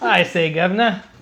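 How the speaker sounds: loud mock cockney.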